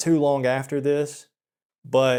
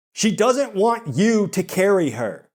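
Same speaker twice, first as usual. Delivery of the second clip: play-acted curt, irritated, high, sharp snap; 6 semitones higher than usual. Retelling how a friend snapped at a guy: imitating someone snapping. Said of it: "snapped at him and she was like".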